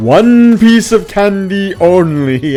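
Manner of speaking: voice booming out. Retelling how a voice speaks to a kid reaching for more candy, in a booming voice. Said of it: "the voice booms out and says".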